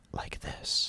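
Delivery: soft, breathy, whispered ASMR voice. Asking viewers which ASMR style they prefer, whispering. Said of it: "where they're whispering".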